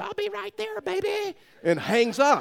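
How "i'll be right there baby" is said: screaming, very high, raspy and rough. Retelling a mother answering her daughter's phone call: retelling a scream. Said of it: "Karen screams".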